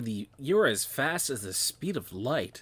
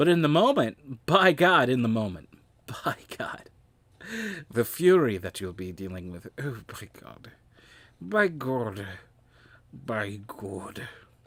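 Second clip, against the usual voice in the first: put-on old sea dog voice. Speaker slips into a voice they cannot place, sea dog voice. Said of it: "am I doing like a Sea Dog voice?".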